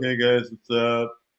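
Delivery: gloomy, glum, slow, flat deadpan voice. Imagining coming on less sarcastic and greeting everyone: glum greeting. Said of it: "I'll kind of come on and be glum, be like".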